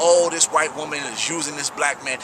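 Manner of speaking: ordinary talk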